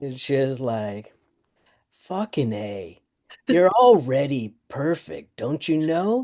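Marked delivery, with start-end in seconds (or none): 2.0-6.2 worn, raspy smoker's voice. Quoting a woman whose voice she loves: imitating her smoker's voice. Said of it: "quote her in her smoker's voice".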